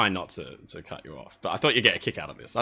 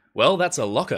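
acted decisive, fully certain tone, pitched up slightly; 5 semitones higher, 4 dB louder than usual. Retelling own past words when looking at the plans: retelling a decisive, fully confident line. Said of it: "and then decisively, with full confidence, said".

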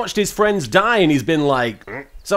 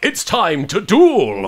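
very slow, every word drawn out. Imagining an anime duel scene, in a Yami Yugi voice. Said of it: "It's weird doing that voice".

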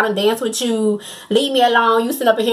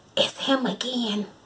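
hushed, barely audible, very quiet whisper; 9 dB quieter than usual. Retelling how a best friend leaned over in the club: imitating a whisper. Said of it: "whispers to me like".

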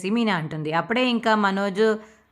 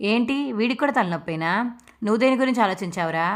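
ordinary delivery

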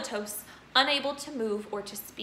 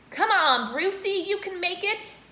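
loud, high-pitched, drawn-out shout; 7 semitones higher, 6 dB louder than usual. Reading a story, someone in the audience cheers on a boy in a contest; shouting. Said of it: "someone shouted".

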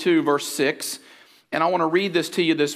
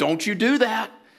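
stern, pitched-up telling-off tone; 5 semitones higher than usual. Imitating a parent warning a strong-willed child: imitating a stern parent warning. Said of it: "Have you ever used that voice?".

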